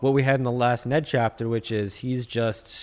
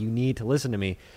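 plain

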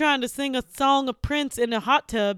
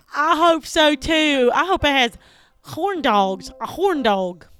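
loud, put-on American Southern accent; 5 dB louder than usual. In a bit where each player picks an accent, one speaks in a southern accent. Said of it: "I'm going to talk in a southern accent".

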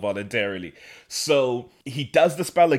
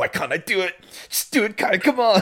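very high, shrill, tearful voice through clenched teeth; 9 semitones higher than usual. Retelling a scene where Kai struggles with himself: imitating Kai, tearful through gritted teeth. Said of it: "tearing up and he's gritting his teeth".

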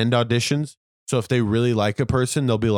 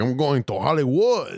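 thick put-on Cuban accent, fired up; 2 semitones higher than usual. Retelling a fired-up man's words about going to Hollywood, in a really heavy Cuban accent.

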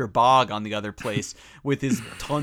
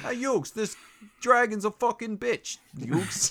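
put-on Brooklyn accent pitched very high; 9 semitones higher than usual. Talking about a favorite Yu-Gi-Oh character, doing Joey's Brooklyn accent. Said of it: "got that Brooklyn accent".

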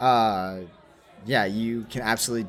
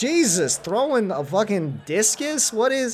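squeaky, very high, baffled, bewildered, confused disbelief; 12 semitones higher than usual. Voicing a character hit by a thrown metal disc: confused. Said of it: "looking obviously confused".

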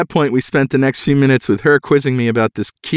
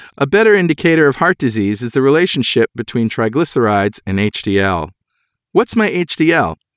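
normal talking voice

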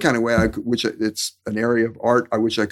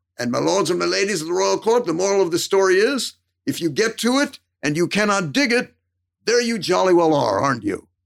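put-on affected, very thick, heavy British accent; 8 semitones higher than usual. Retelling what he said at the end of one of his stories: very thick British accent. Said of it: "he affected a very thick British accent".

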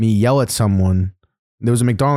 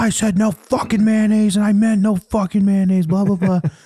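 mock, very high, furious screaming rant; 11 semitones higher than usual. Retelling a sandwich order complaint, imitating a customer screaming. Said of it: "comes back flipping out and screaming at me".

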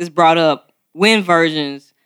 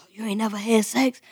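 sudden, soft, hushed half-whisper; 4 semitones higher, 8 dB quieter than usual. Retelling how others asked the question: imitating someone half-whispering. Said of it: "they would start whispering all of a sudden".

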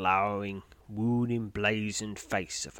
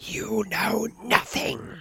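shrill, high, rough, trembling hissed outburst; 12 semitones higher, 5 dB louder than usual. Narrator reads a frail man confronting the listener: hissed. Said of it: "He hisses through cracked lips".

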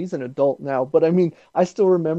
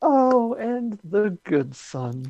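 very drawn-out, very slow, high-pitched villain drawl; 7 semitones higher than usual. Imagining a line for the Joker in a movie: Joker voice. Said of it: "in the most Joker way".

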